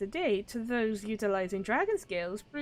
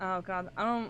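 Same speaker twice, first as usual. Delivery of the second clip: normal talking voice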